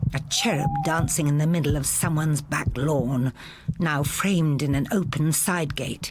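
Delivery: ordinary delivery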